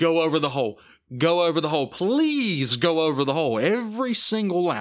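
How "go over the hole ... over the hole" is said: play-acted urgent, begging, repeated yelling. Retelling what was yelled during a race with the microphone off: retelling own past yelling. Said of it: "I was yelling".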